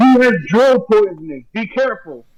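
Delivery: high shouted voice. A player speaks for their character in a tabletop game, shouting a warning. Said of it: "Luna shouts".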